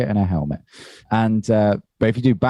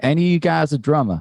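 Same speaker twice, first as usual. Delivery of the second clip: pitched-up put-on American accent; 7 semitones higher than usual. Repeating the american's question to the crew after praise for the impression, use a put-on american accent. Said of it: "Great accent".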